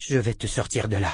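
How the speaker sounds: ordinary delivery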